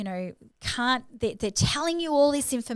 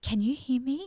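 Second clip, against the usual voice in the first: quiet, almost whispered voice; 2 semitones higher than usual. Retelling own calm words on the phone line: imitating own quiet near-whisper. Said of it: "almost whispering in the line".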